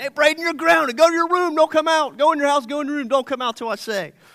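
put-on yelling, acted-out shouting. Acting out grounding the neighbor kids, retelling his own yelling. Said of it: "Yelling all the time".

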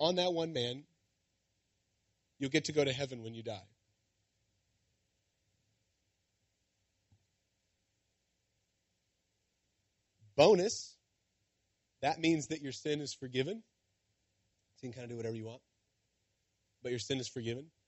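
soft, slightly sarcastic, tongue in cheek. Summing up what the listeners got out of the teaching: a little sarcastic. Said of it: "I'm being a little bit sarcastic".

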